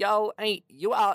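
very high-pitched, bad put-on American accent. Reading a news story, quoting a man walking into a store: terrible American accent impression. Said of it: "this is a terrible American accent impression".

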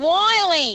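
ringing nasal twang on name. Showing the others how the name should sound: bright nasal tone. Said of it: "I want it to sound like this".

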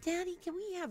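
put-on very high, girlish little girl voice. Imitating the girls asking their dad for something, in a high-pitched voice. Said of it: "in a high-pitched voice".

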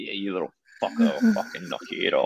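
acted-out, half-joking rough menace, swooping and animated. Retelling how a man grabbed the speaker's neck on camera, mock threat said with a smile. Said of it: "he's sort of doing it with a smile".

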